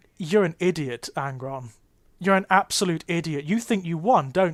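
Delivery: plain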